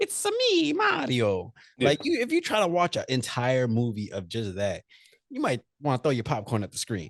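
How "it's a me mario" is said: very high, swooping, slow, sing-song cartoon voice. Explaining the classic voice to a co-host, the speaker demonstrates a Mario voice. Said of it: "the classic Mario voice, the high pitch".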